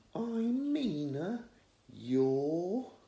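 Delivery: bored sing-song voice. Reading a story, a girl repeating her introduction: bored sing-song voice. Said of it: "in a bored-sounding, sing-song voice".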